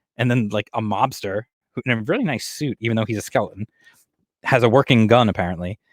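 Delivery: ordinary delivery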